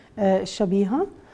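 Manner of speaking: plain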